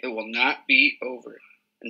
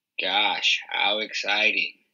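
bored, deadpan, totally unenthused, utterly unexcited voice; 4 semitones lower than usual. A brother reacts to the board-game move his sister reads out; very unexcited. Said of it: "said Peter in a very unexcited voice".

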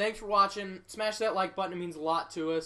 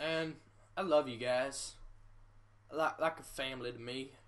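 put-on low, soft Southern accent; 5 semitones lower, 5 dB quieter than usual. Thanking viewers at the end of a video, in a southern accent. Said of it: "I don't know why I went into a southern accent".

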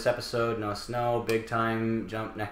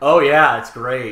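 very loud, dripping, snarky sarcasm; 10 dB louder than usual. Retelling how the actors answered a question: imitating snarky sarcastic reply. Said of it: "replied with such snark and sarcasm".

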